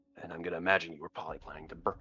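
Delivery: very quiet, barely audible whisper. Asking another character about burning the item, whispering in character. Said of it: "whispering this part".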